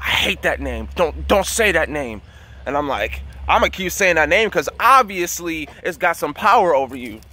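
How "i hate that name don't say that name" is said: put-on demonic creature voice. Retelling a dream where a woman answered the speaker, in the Nephilim voice. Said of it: "in the Nephilim voice".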